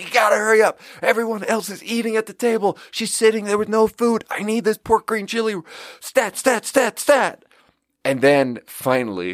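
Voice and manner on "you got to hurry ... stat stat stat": high-pitched screaming. Retelling a kitchen rush, the speaker re-enacts screaming for the order: retelling own screaming. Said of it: "I'm screaming like".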